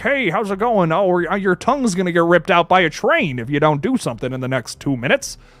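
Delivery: terrible put-on goofy, silly voice. Comparing a horror villain's new voice to the old one, doing a goofy voice impression. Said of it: "It's it was just a goofy voice".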